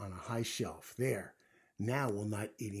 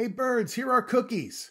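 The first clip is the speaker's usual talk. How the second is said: very high shout at full volume; 14 semitones higher, 12 dB louder than usual. Frog takes the box of cookies outside and calls to the birds: loud shout. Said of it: "He shouted in a loud voice".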